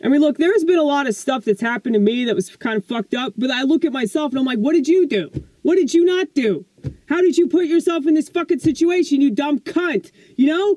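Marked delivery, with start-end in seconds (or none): 4.6-10.1 put-on mock yelling. Speaker acts out what they tell themself, retelling yelling at oneself. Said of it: "I'm yelling at myself the same way".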